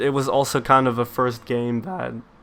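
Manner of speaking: voice cracking. Reviewing a game that feels timeless to them, voice cracking. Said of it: "holy shit, voice crack".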